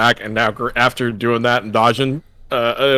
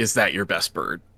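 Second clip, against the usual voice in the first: play-acted angry, all-caps reading; 5 semitones lower, 10 dB quieter than usual. Reading out a best friend's all-caps message: imitating an angry message. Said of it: "Like, angrily".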